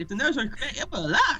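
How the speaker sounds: high-pitched, grating instructional voice.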